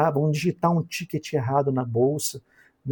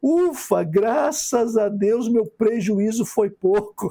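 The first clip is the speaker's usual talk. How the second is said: high voice, laughing through the words; 8 semitones higher than usual. Quoting what people say after selling in panic, laughing while talking. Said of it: "eu tenho que dar risada".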